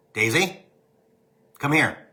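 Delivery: stern, no-nonsense dad voice. Calling the dog over after she ignores her name: daddy voice. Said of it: "I have to use my daddy voice".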